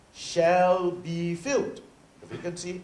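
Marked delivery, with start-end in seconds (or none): 0.2-1.8 heavy emphatic stress on the word shall. Reading out an article of the Constitution, emphasizing 'shall be filled'. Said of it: "and I emphasize the words".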